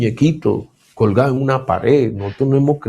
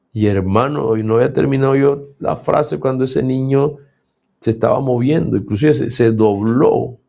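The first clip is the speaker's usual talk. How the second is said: ordinary talk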